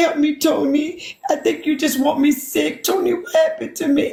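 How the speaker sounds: put-on high, babyish, blubbering, crying, sobbing baby talk. Retelling pleading with someone for help, imitating own crying baby talk. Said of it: "I was boo crying and talking like a baby".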